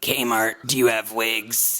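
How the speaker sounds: very low, hoarse, raspy sick voice. Retelling how she phoned Kmart with laryngitis, imitating her laryngitis voice. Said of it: "She talks like this".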